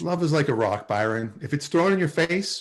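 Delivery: plain reading voice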